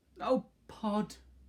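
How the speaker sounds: very high, husky, pleading voice. Narrator reading Homily pleading with Pod: husky pleading. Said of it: "pleaded Homily in a husky voice".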